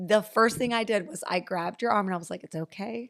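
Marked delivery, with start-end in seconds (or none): 2.4-3.1 soft whisper, higher and quieter. Retelling grabbing someone's arm to reassure them: imitating a soft whisper. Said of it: "I just whispered softly".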